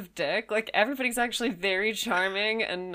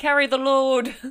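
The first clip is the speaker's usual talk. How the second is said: loud, showy, put-on northern English accent; 4 semitones higher, 7 dB louder than usual. Joking after thanking someone for carrying them forward, put-on northern accent. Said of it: "My flawless northern accent".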